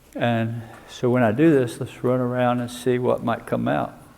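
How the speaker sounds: ordinary delivery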